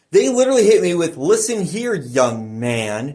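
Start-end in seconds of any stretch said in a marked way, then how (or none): 1.1-3.1 put-on superior, condescending, accusatory scolding tone. Retelling how people refused to let him explain, in a mock-accusatory, condescending tone. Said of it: "in that accusatory, "I'm better than thou," uh, boomer fucking asshole tone".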